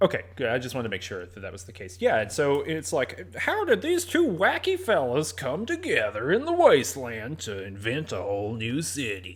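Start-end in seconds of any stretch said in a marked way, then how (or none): 3.4-9.4 smooth, slow radio dj announcer voice. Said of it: "That's my drive time radio D J voice".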